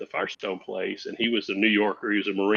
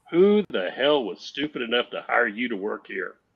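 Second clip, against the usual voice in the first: mild, mock calling-out tone; 2 semitones higher than usual. Retelling confronting a man at the VA center, in a loud voice. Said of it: "in a loud voice".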